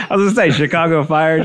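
plain

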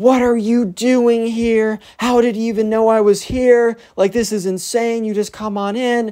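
mock very high, shrill scream. Retelling how Alex reacted to the ex-boyfriend at the door: imitating Alex screaming. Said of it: "you immediately hear Alex start screaming".

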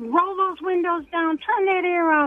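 play-acted crabby scream, very high-pitched. Retelling a crabby instructor's orders during a license test: imitating someone screaming. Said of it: "he was screaming at me".

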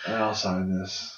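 put-on sleepy or high voice. Retelling meeting Daniel Bryan, eyes barely open: imitating a super tired Daniel Bryan. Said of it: "he was either super tired or super high".

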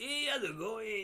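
high, yappy cartoon dog voice. Imitating the chihuahua from Oliver and Company: Cheech Marin voice. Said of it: "Cheech Marin".

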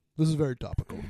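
put-on elderly statesman voice. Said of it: "this is my Henry Kissinger impression".

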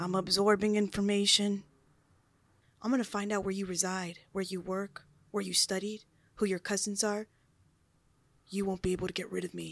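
chilling, sinister, menacing tone. Addressing enemies in the comments with a chilling menacing threat. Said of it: "Chilling words".

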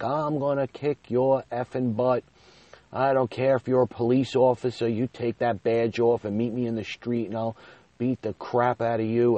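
explosive, out-of-control, high, maniac-like furious screaming. Retelling a phone call, imitating own past screaming like a maniac. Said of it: "I started screaming like a maniac".

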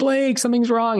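high-pitched panicked calling. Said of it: "So I'm screaming for my wife".

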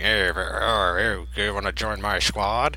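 spoken through clenched teeth. Discussing a movie, the speaker imitates an actor's line: Josh Brolin talking through teeth. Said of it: "Talking through his teeth most of the movie".

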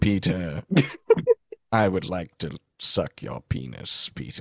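put-on celebrity voice, deep with wide pitch swoops. Doing an impression, then saying it was Alan Rickman: Alan Rickman impression. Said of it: "I think that was Alan Rickman".

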